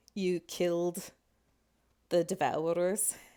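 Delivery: eerie, creepy droning voices in unison. Everyone in the tavern speaks at once to the players, in a creepy drone voice. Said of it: "in like this kind of like at world's end creepy drone voice".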